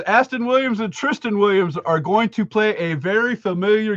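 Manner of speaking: ordinary talk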